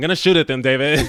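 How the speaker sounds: very loud, belted, expressionless deadpan. Asked by another speaker to do the line: imitating Aubrey Plaza's deadpan line. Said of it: "do the line from, like, with the gun".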